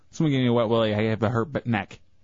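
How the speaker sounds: normal talking voice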